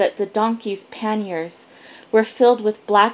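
plain

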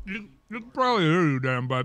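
muffled, mouth-full speech. Answering whether the guest can hear, talking with a mouthful of ribs. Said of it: "with a mouthful of ribs".

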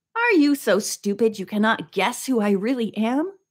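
ordinary delivery

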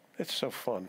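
sarcastic delivery. Asking listeners whether someone ever blew up at them: sarcastic. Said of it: "I said sarcastically".

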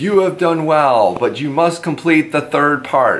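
put-on storybook troll voice. Telling a story, the troll speaks to the one who brought back the treasures: troll voice. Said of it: "And the troll says".

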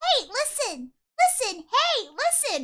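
very high, slow, grating, pestering fairy voice. Speaker answers another person's voice with her own: annoying Zelda voice. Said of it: "I'm gonna do the most annoying Zelda".

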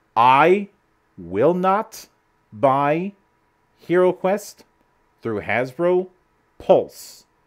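slow, halting, each word deliberately spaced out. Speaker announcing a decision so everybody can hear, slow and deliberate. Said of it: "let me say this slowly".

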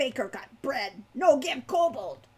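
bitter, snarling creature voice. A narrator reads the kobold's reply to Falcon's question, snarling kobold. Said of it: "the creature snarled".

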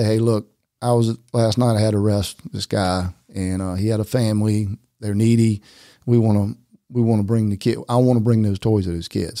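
ordinary delivery

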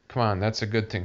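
ordinary delivery

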